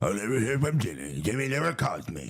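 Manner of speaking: put-on cranky old-person voice, barked out grumblingly. Imitating someone who complains a friend never calls: mock eighty-year-old barking complaint. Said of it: "if I was, like, eighty years old and I was barking about somebody".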